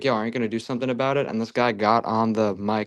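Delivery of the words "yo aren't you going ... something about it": fast, shouted street yell. Retelling how a friend in the car yelled at a police officer, retelling a friend's yell. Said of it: "my friend like yelled like".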